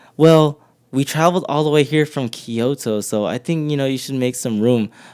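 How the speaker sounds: ordinary talk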